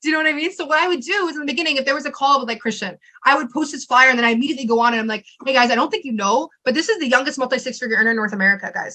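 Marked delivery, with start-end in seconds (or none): none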